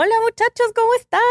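very high, put-on northern Mexican norteño accent. Speaker recalling needing to sound Mexican for a regional radio station, faked northern Mexican accent. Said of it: "yo fingí al agua así como".

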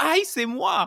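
very high, loud, high-pitched shouted yell. Retelling calling out in a workshop when recognizing an activity: imitating own yell. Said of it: "I just yelled out".

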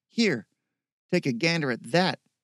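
ordinary delivery, nothing marked

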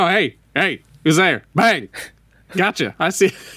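high, goofy, wisecracking robot voice. Describing the turrets in a game, silly turret voice. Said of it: "making silly one-liners".

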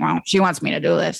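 put-on man's muttering under the breath. Recalling how Tom first reacted to the idea: imitating Tom rumbling under breath. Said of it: "just like rumbling under his breath".

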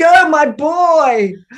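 high, loud, drawn-out yell. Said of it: "But I just keep yelling".

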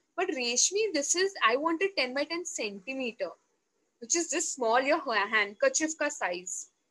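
ordinary talk

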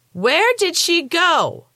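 wild, shrill, very high screech. Narrator voices a mother as thrown weights smash the mirrors, screeching. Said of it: "His mother screeched".

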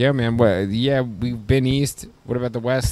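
put-on slow drawl of a middle-aged man. Teasing the other speaker about talking directions, imitating someone sounding thirty-five. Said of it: "You sound like you're thirty-five".

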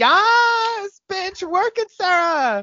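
high, loud cheering whoop. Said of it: "And I'm just like".

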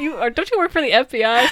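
screaming. Recapping a class scene, voicing someone at the back, retelling someone screaming. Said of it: "Someone from the back screams".

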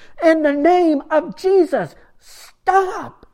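very high, loud, slow, very drawn-out yell. Retelling how a monk shouted at the crowd: retelling a yell. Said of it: "he keeps yelling".

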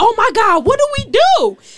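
put-on scared, panicked shriek, very high and loud. Retelling seeing police ride up the street, acting out being scared. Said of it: "and I got so scared".

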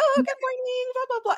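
very high, octave-up customer-service voice. Recalling serving wealthy customers, the speaker demonstrates a high customer-service voice. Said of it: "My customer service voice ... up the octave".

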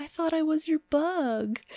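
tiny sad voice, very high pitched. Retelling a guy talking to a girl filming him, imitating a little sad voice. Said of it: "he like does this little like sad voice".

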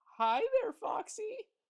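starry-eyed, dreamy, very high voice. He greets her as she comes over to the table, dreamily. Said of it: "Runt of the Litter said dreamily to her".

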